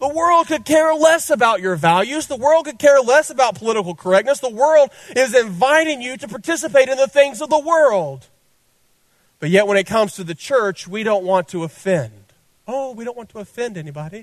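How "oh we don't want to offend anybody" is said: put-on British accent accidentally slipping in. Mocking the church's fear of offending anyone: accidental British accent.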